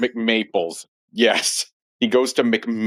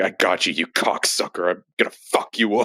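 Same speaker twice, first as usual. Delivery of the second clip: put-on exaggerated menacing voice with lower pitch; 3 semitones lower than usual. Retelling how the police chief catches him, imitating an over-the-top threat. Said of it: "in his typical over-the-top fashion".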